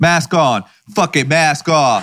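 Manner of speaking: fired-up, aggressive, excited exclamation. Kicking off the episode about dropping masks: aggressive and excited. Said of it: "Wow, aggressive".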